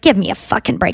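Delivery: low, grumbling mutter under the breath. Retelling a passenger's remark to a flight attendant: imitating someone muttering. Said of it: "She kinda muttered it".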